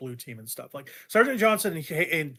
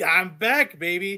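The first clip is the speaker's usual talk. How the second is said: put-on smug, knowing swagger, pitched higher; 3 semitones higher, 6 dB louder than usual. Describing a game character's return, imitating a smug, knowing character. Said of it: "like he knows that you know".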